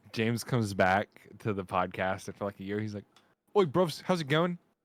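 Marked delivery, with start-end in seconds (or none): 3.5-4.5 put-on British accent, pitched up. Imagining James returning to the podcast after a year: imitating James's British accent. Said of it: "If I develop a fucking British accent".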